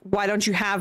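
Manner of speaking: plain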